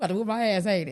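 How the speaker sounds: mock woman cracking up laughing. Imitating a woman from an Instagram video: imitating a woman cracking up laughing. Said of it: "she be cracking up and she be like".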